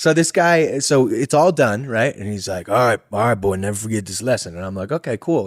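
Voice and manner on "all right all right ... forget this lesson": put-on quick old-west cowboy voice. Retelling what a man told the speaker afterwards, in a Red Dead Redemption character voice. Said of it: "It sounds like a character out of Red Dead Redemption".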